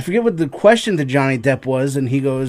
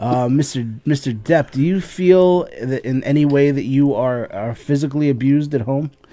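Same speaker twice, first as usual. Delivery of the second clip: usual speaking voice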